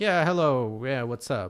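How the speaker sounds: casual, relaxed, low-energy everyday voice. Showing the usual real-life way of talking: casual low-energy talk. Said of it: "like how you talk in real life".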